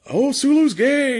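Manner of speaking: high, slow, over-the-top, heavy-handed gushing.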